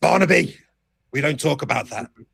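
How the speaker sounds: put-on mild, thin, creaky, rasping old-man outburst. In a role-play scene, an old man shouts down at a younger man, old man shouting. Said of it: "the old man looks down and shouts".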